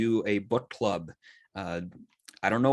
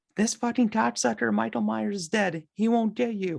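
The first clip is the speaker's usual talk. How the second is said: put-on very high-pitched baby voice; 13 semitones higher than usual. Retelling a scene where Lori talks to her stuffed animal in bed, in Lori's baby voice. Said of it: "in the sort of baby voice".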